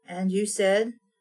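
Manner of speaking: ordinary talk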